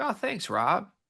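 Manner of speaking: breezy, a bit high. Imitating an unbothered player hearing a quote: Richie Saunders impression.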